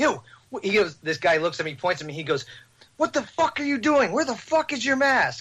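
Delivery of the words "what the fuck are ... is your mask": mock shrill, high, furious, outraged shouting. Retelling what a stranger shouted at him in public, retelling a man's yell. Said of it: "He was yelling at me".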